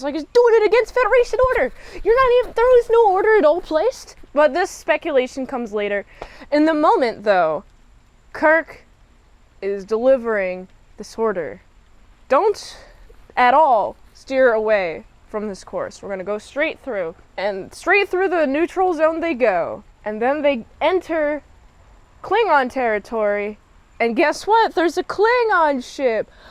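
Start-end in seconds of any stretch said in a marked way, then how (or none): 0.2-4.2 high, fast, loud blabbing. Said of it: "Scotty has a big mouth on him".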